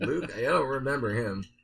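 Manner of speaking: sarcastic tone with mock cluelessness.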